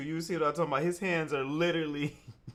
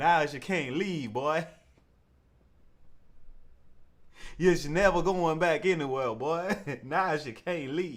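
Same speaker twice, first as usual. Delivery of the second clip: put-on old-fashioned manner of speech. Mocking another speaker's line about being unable to leave court: imitating slavery-era "slave talk". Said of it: "he even said it in the slave talk".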